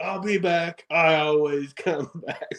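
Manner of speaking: slow, drawn-out, mild half-yell. Retelling being thrown out of a building while fighting, yelling like Chucky. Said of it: "yelling like Chucky".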